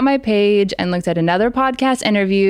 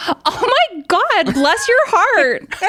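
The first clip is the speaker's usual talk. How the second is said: voice shot up very high, slow and drawn out; 11 semitones higher than usual. Retelling how they answered a fan's compliment after a performance, retelling a high-pitched reply. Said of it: "nor does my voice usually go up that high".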